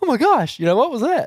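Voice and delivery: squeaky, very high, thrilled, fired-up put-on excitement. Retelling how Piper reacted when a shot went off: imitating Piper fired up. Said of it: "Piper was all fired up".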